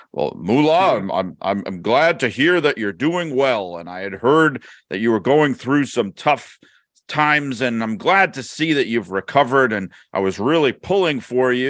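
concerned, earnest, empathetic, sympathetic interviewer voice. Retell how Mean Gene walks over to Moolah and tries to show empathy, in a Mean Gene voice. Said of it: "in his Mean Gene voice".

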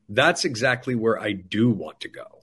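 play-acted very firm, steady, resolute tone. Retelling how the president answered the doctors: imitating a very firm reply. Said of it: "he says very firmly".

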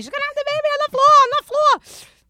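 frantic, very high-pitched, loud scream. Recounting his wife's labor, the speaker reenacts himself at the hospital, retelling a scream. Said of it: "I'm screaming".

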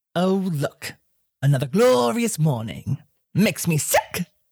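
rough, gravelly put-on character voice. Asked for your best take on an iconic character, you try it: gravelly character voice. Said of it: "Make your voice a little bit more gravelly".

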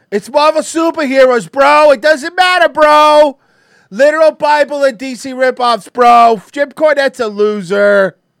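very loud, high, brash put-on bro voice. Repeating lines about Marvel superheroes, doing a Vince Russo impression. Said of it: "That's my Russo impression".

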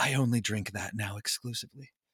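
sultry, come-hither tone. Imagining Zeno finally admitting he loves the drink: sultry voice imitating Zeno. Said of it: "that was your sultry voice".

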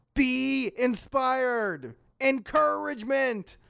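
shouting loudly. Trying to inspire a companion who is tired of adventuring: loud yelling. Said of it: "Loud yelling!".

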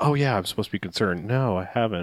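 acted careless indifference, uncaring and unsympathetic. Retelling a movie character's reply about her daughter: imitating an uncaring tone. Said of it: "makes her the most uncaring, unsympathetic person".

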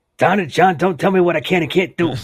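terrible put-on voice, very high, shrill, very loud, booming. Greeting a podcast co-host as someone else: terrible Ernesto impersonation. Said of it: "my terrible Ernesto impersonation".

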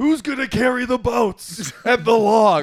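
shrill, high, loud yelling. Telling of walking past laughing people, reenacting how he started yelling: retelling a yell. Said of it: "So I just started yelling".

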